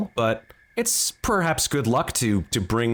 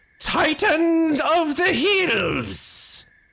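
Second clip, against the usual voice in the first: put-on very high, very slow little dwarf boy voice. Performing as a disguised character to a hill giant: dwarven boy voice. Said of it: "is that what a dwarven boy sounds like".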